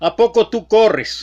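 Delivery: high, taunting, mocking, sarcastic tone. Retelling a stranger's question about running: imitating a mocking sarcastic question. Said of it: "me preguntó en tono burlón, en tono sarcástico".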